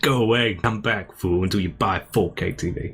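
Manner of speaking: slow, condescending, pretentious, self-important, patronizing tone. Retelling the trailer presenter's words, imitating a pretentious, patronizing presenter. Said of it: "it was really pretentious and patronizing".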